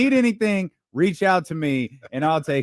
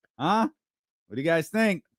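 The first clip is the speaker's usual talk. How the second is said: put-on slightly drunk, tipsy voice; 3 dB quieter than usual. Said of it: "James was a little bit drunk".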